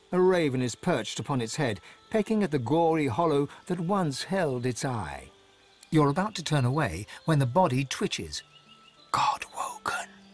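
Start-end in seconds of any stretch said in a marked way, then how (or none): 9.1-10.1 soft, airy, breathy whisper. Narrator reading a story aloud, a broken fawn's body speaks, whispered. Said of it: "it whispers".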